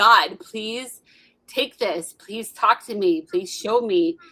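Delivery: desperate, begging, pleading tone. Retelling own past prayers while on the floor: retelling a desperate begging prayer. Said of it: "just weeping and begging and pleading".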